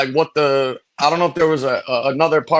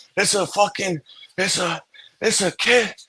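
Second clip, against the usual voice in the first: very slow, breathless, hyperventilating, halting stumbling words; 4 semitones higher, 5 dB quieter than usual. Retelling what a cop said after what he saw: imitating someone hyperventilating. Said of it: "He's, like, hyperventilating and shit".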